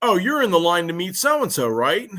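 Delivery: mocking, sarcastic, knowing tone. Speaker retells what a line worker said to him, retelling a sarcastic worker. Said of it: "the one worker there sarcastically goes".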